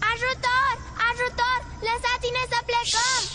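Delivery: loud shouting. Testing whether making lots of noise gets the prince's attention, yelling for help. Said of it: "Liniște!".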